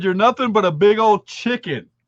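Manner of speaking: ordinary delivery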